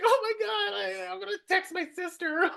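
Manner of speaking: play-acted weepy, very high, tearful crying voice. Retelling a parking attempt Tanya can't bear to watch, imitating Tanya crying. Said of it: "she's crying".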